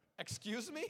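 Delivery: stunned, taken-aback, high, incredulous, disbelieving tone. Retelling own reply to a stranger's remark: acting out own shocked reply. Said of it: "forgive me for my poor skills of acting".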